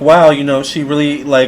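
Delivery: ordinary delivery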